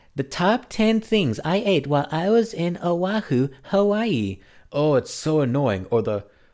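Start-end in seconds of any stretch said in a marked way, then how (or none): 0.2-4.4 put-on high synthetic text-to-speech girl voice. Mocking video narration on reposts: imitating a girl text-to-speech voice. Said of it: "there's the girl".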